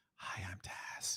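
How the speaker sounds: soft, breathy, close ASMR whisper. Teasing the person they're talking to about whispering in a clip, imitating Taz's ASMR whisper. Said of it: "After you start whispering".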